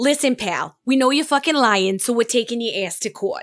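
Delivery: put-on Boston-accented voice. Narrator voices the people of Boston suing the alcohol company: Boston accent. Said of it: "I did a very good Bostonian accent".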